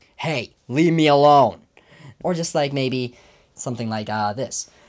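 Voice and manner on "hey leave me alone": fed-up, exasperated, frustrated raised voice. Demonstrating a voice he gives the character Chuck, in Chuck's frustrated voice. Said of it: "my sort of like frustrated voice".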